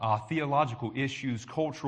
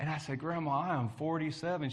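usual speaking voice

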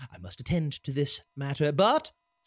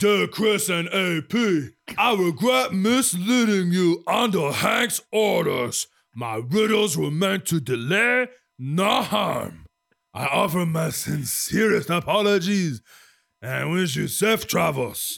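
loud troll character voice; 3 semitones higher, 5 dB louder than usual. Reading aloud a letter from Brol the Troll, in Brol the Troll voice. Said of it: "I will approximate his voice for you".

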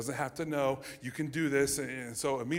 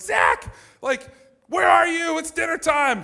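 piercing, shrill, very high, very loud yell; 13 dB louder than usual. Recalling his mom calling him to dinner while he hid in a game, imitating mom's shrill yell. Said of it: "she yells, she goes like".

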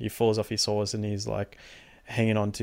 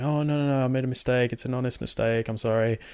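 put-on pleading, begging voice; 3 semitones higher than usual. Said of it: "begging for his life".

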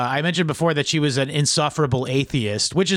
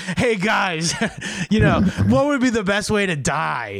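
put-on tipsy, drunken, loose, offhand rambling; 5 semitones higher than usual. Retelling what Mark Antony asked his guests, drunken Mark Antony. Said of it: "just drunkenly goes like".

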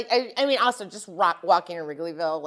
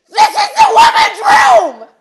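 very high, very loud, very slow, drawn-out scream; 18 dB louder than usual. Retelling how a woman came up to the speaker in the restroom: retelling a woman's scream. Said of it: "she screamed".

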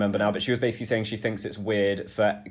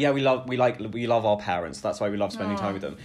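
usual speaking voice

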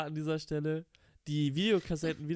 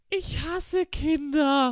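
put-on very high, loud little kid's voice; 11 semitones higher, 7 dB louder than usual. Retelling what a six-year-old said when told to be quiet: imitating a child's exact tone. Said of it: "sagt wirklich genau in diesem Tonus".

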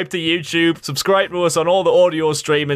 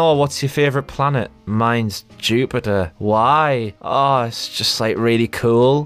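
low, dim, dopey airhead voice, drawn-out "why"; 5 semitones lower than usual. Mocking a film's dialogue while critiquing it, doing a Mandy impression. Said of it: "[name]'s impression of Mandy nearly became the stupid girls".

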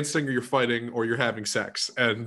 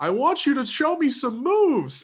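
mock shrill shout, loud, high, swooping and drawn out; 4 dB louder than usual. Recounting a scene from her show, a man speaks over party music: retelling a loud line. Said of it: "loudly goes".

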